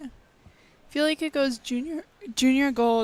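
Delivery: breaking, cracking voice mid-line. Answering whether it felt bigger than anything else they'd done: voice cracking. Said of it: "Voice crack".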